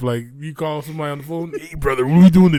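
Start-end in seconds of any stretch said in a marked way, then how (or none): 1.6-2.6 booming, very loud, larger-than-life bellow. Imitating how someone from a commercial talks on the phone: imitating how he talks. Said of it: "they say he talk like that real life".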